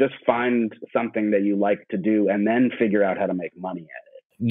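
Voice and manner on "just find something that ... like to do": plain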